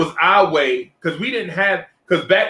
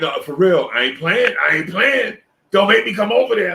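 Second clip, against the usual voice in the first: put-on tipsy man voice. Retelling a story, the speaker acts out the other man's reply, imitating a tipsy man. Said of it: "I know he wasn't coming because he tipsy".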